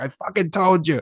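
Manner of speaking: put-on half-yelled English accent. Retelling a man on the phone yelling at his mom, imitating English-accent yelling. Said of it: "he's got that English accent and he's just yelling".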